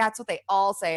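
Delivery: plain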